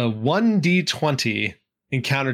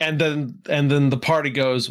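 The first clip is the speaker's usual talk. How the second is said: plain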